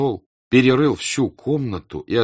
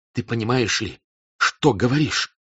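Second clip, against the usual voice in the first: trembling, unsteady, quavering. A cadet tears his arm free and confronts the man who held him, trembling voice. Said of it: "сказал он дрожащим голосом".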